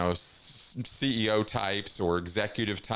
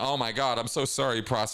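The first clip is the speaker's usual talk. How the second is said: mock pleading, begging tone; 3 semitones higher than usual. Retelling how people apologized when someone frowned at them: imitating begging for forgiveness. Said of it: "practically begging and pleading, crying for forgiveness".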